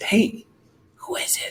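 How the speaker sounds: very slow, hushed, drawn-out whisper. Retelling a bible story, acting out a disciple's question: imitating a whisper. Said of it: "whispers over".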